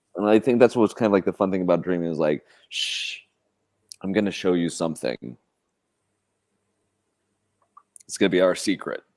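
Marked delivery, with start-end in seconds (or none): 2.7-8.9 hushed, secretive, conspiratorial whisper. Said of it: "the finger up in a whisper".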